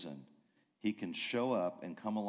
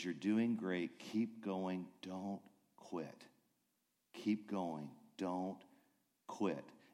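soft, close-up, hushed stage whisper; 3 dB quieter than usual. Retelling a story where a pianist encourages a child: imitating a half-whisper. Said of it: "he whispers".

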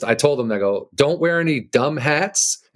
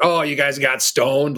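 put-on mocking, teasing tone. Retelling how dad made fun of them: imitating dad mocking. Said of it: "my dad just made fun of us".

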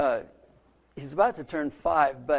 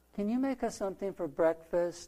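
put-on soft, gentle, sweet child voice, pitched up; 5 semitones higher, 5 dB quieter than usual. Pastor retelling his grandkids asking him for breakfast: soft, sweet child voice. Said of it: "a very soft, sweet voice".

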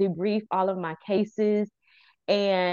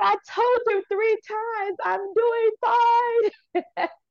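mock very high, slow, drawn-out tearful outburst; 14 semitones higher, 3 dB louder than usual. Retelling bursting into tears when asked how she is: retelling a tearful outburst. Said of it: "I burst out in tears".

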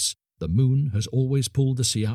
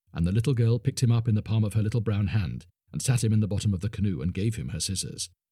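usual speaking voice

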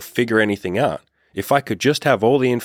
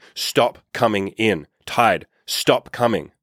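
mock grave, slow, solemn, insistent delivery; 2 semitones higher than usual. Storyteller acting out a man commanding the tide, imitating a booming, serious voice. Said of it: "in a very booming, very serious voice".

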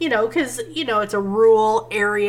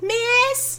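put-on tiny little-kid voice, very high pitch. Imitating how children in a movie call their teacher, little kid voice. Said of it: "hear it in a little kid voice".

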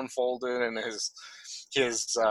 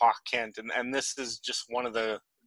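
plain

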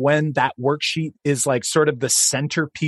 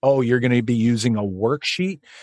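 negative disapproving tone, lower; 3 semitones lower than usual. Demonstrating how people sound speaking negatively about worksheets, negative tone about worksheets. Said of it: "Sometimes people make it sound like it's a negative thing".

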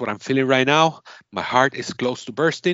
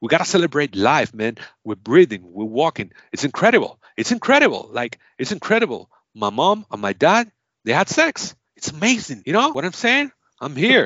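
badly done put-on British accent. Performing a speech for someone to guess, as Daniel Kaluuya in a bad British accent. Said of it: "I suck at my British accent".

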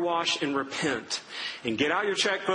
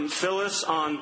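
ordinary talk

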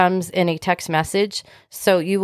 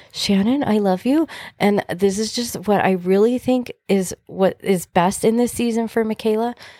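calm, gentle, mild way of speaking; 3 semitones higher than usual. Recounting a phone call with a best friend, Carrie's soft-spoken voice. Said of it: "She's very soft spoken".

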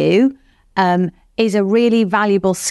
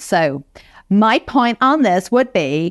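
really bad, fake put-on American accent. Coaching listeners to state their point directly, demonstrating a bad American accent. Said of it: "that's a really bad American accent".

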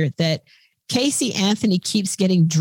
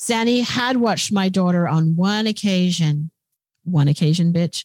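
ordinary talk

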